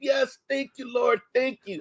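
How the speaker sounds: mock, very high, shrill, all-out screaming shriek. Speaker retells praying on their knees, retelling own screaming. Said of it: "I was screaming".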